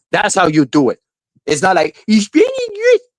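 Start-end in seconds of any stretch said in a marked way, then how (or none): 2.0-3.0 very high, squeaky cartoon voice. Mocking someone's impression attempt, in a Mickey Mouse voice. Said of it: "with your Mickey Mouse voice".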